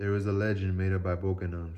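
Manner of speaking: plain reading voice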